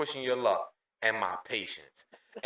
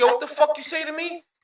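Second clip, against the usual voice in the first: mock very high, angry, confrontational outburst. Retelling his angry reply to a coworker: imitating himself angry. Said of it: "instantly made me mad".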